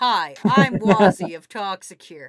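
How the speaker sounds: very loud, big, belted, booming voice. Voicing an ad line as if Chris Pratt read it: Chris Pratt voice. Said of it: "I need Chris Pratt in here to voice this".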